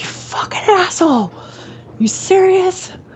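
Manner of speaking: very high-pitched, furious, startled yelp. Retelling being scared in the shower: imitating screaming at someone. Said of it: "I just screamed at the top of my lungs".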